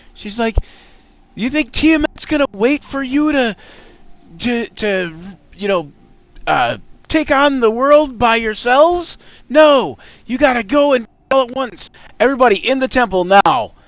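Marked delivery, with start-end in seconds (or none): 1.4-13.7 shouting, higher and louder. Voicing an NPC who walks through the doors: yelling. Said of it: "And you hear her yelling".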